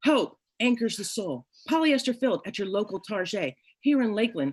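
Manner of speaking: announcer voice in TV commercial sales style. Pitching a pillow after being asked to sell it: commercial sales pitch. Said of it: "You're interrupting my commercial".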